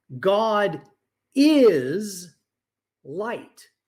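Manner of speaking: stress on the word "is". Showing where the speaker would put the emphasis: stress on the word is. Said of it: "I would put it on the word is".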